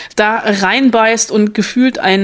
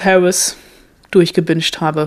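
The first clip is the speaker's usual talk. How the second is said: usual speaking voice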